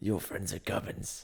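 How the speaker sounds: slow, creaky, menacing thug voice.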